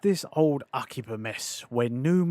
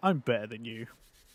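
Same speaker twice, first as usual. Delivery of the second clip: smug, snide, condescending put-on voice; 5 semitones lower, 6 dB quieter than usual. Describing a game character's attitude: snide condescending voice. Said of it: "Snide asshole that's like".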